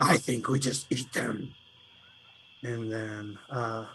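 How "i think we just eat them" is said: deep, grumbling, disgruntled lizard voice. A second lizard in the group chimes in, deeper disgruntled lizard voice. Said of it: "more disgruntled, kind of like deeper lizard voice".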